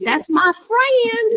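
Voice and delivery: put-on very high-pitched, twangy country accent. Recalling introducing a friend to mama, said with a country twang. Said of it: "with my country twang".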